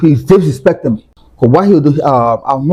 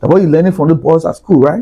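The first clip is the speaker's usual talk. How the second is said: ordinary delivery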